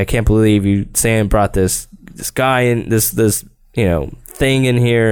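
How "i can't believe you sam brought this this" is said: ordinary delivery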